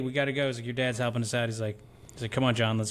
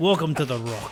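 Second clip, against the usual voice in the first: put-on Scottish accent, higher and louder; 3 semitones higher, 5 dB louder than usual. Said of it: "he was Irish there for a second".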